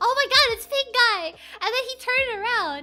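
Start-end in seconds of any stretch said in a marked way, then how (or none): 0.0-1.3 loud, carrying yell at full volume. Retelling spotting someone in a pink guy costume: imitating own loud yell. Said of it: "but I yelled it so loudly".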